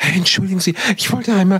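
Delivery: high, exaggeratedly courteous, overly polite, nervous voice. A TV dancer imitates fans who approach him far too politely, mock over-polite fan. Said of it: "die viel zu höflich sind und komplett übertreiben".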